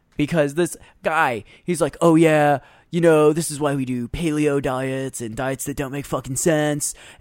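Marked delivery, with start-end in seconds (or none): 2.0-7.0 put-on mocking obnoxious arrogant jerk voice. Telling a story about a guy, the speaker imitates him in his douchebag voice. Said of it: "Is that your douchebag voice?".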